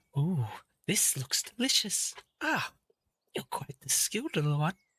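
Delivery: oracle voice, appreciative, pleased and gracious. Voicing the Pythia accepting a cup of tea: Pythia voice. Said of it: "She's like".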